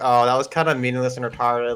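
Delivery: ordinary talk, nothing marked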